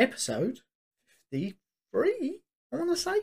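slight voice crack. Host announcing the episode number, with a little voice crack. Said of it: "a little voice crack there".

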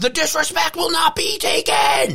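put-on very high, fired-up drunk yelling. Recalling being drunk at a game against the Titans in Philadelphia, retelling own yell. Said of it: "I was yelling".

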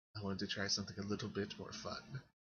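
soft, hushed whisper, close into the ear. Voicing a character who whispers in a player's ear: whispering. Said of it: "she whispers in your ear".

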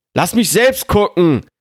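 high, ringing, yelled shout. Reading a story aloud, voicing an older man who is shouting. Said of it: "schrie der ältere Mann".

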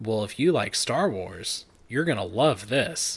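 ordinary delivery

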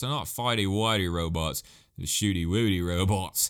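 really bad, fake, put-on Australian accent. Talking about a story everybody likes, slip into a bad Australian accent. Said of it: "I dropped into an Australian accent".

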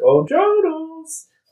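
very high cartoon voice with a name stretched out. Suggesting how a line should have been said: Mickey voice. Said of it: "you should have done in the Mickey voice".

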